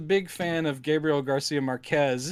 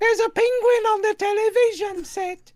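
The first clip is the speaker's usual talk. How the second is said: very high, shrill, loud comic character voice; 6 dB louder than usual. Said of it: "sounds exactly like a Monty Python character".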